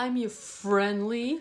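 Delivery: friendly said with an odd, weird intonation. Mimicking how the other speaker just said his intro line: imitating a weird way of saying it. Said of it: "Did I say it weird?".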